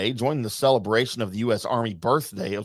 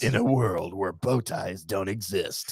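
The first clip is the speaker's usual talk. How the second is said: movie trailer narrator voice, lower and quieter; 3 semitones lower, 4 dB quieter than usual. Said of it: "the "I'm a movie voice"".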